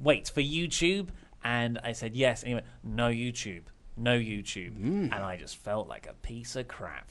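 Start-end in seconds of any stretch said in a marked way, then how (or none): 2.8-3.6 put-on Japanese accent. Retelling Tomohiro Ishii's reply to the speaker, in a Tomohiro Ishii Japanese accent. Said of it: "Sorry, I shouldn't do an accent".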